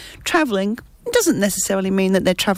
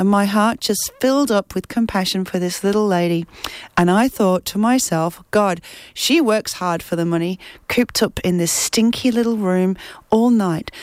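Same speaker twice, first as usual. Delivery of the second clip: ordinary talk, nothing marked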